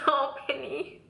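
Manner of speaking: tearful, happy crying. Giving her twenty-one-week update, she breaks into crying happy tears. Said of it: "these are like such happy tears".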